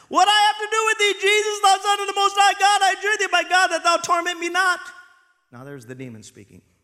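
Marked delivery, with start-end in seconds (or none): 0.1-4.8 piercing, shrill cry, very high and very loud. Reading a bible story aloud, voicing the demon speaking to jesus, crying out with a loud voice. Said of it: "he cried out with a loud voice".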